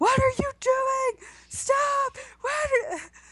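acted very high, drawn-out scream. Retelling how a cop at his post yelled at a guy, imitating a cop screaming. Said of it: "he's screaming at the guy like".

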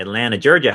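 put-on southern US Georgia accent. Trying out an accent after the other speaker's: georgia accent. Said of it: "I'll try with Georgia".

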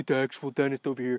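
a little panicky, hurried, slightly frantic, acted. Retelling what the freaked-out dentists said: imitating a slightly frantic voice. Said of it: "slightly frantic voice".

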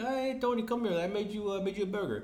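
high, sugary, fake-nice put-on motherly voice. Retelling a show scene where a mom is quote unquote trying to be nice: imitating a mom trying to be nice. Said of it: "quote unquote, trying to be nice to him".

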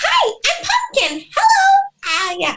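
very high little character voice, swooping, slow, drawn out. Speaker shows how they greeted people as their character, in the Pumpkin character voice. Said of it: "Put on a little character voice".

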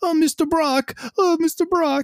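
very high, tiny, fawning voice. Imagining a Spider-Man talking to Venom: imitating Tom Holland's Spider-Man. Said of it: "Talking to this Venom like".

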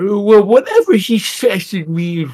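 high, slow, mock eighty-year-old man voice.

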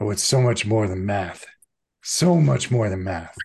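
scowling, irritated tone. Voicing a character who scowls at a player's question: scowling, irritated. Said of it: "She immediately scowls and says".

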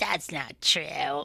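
put-on smoky, husky, raspy LA valley girl drawl. Quoting an ex who didn't believe the speaker, in a smoky, raspy voice. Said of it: "She had this like smoky, raspy voice".

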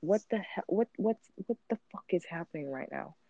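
put-on high, baffled, creeped-out, confused outburst. Retelling a reaction to a coffee machine that turned itself on: retelling own confused reaction. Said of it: "I'm just so confused".

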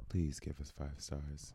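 very low, seductive, sexy voice. Asked to tell listeners what they need to hear, in a sexy voice. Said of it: "In that sexy ass voice of yours".

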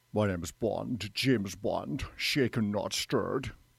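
put-on Scottish film-star accent. Asked which impression is best, do the first one as a Sean Connery impression. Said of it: "That was Sean Connery".

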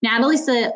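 plain

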